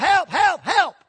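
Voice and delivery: high, loud screaming. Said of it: "he's screaming".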